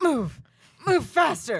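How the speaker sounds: mock-panicked voice. Asked to show how he panics, the speaker acts out his words, imitating him panicking. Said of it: "Give us an impression of how he panics".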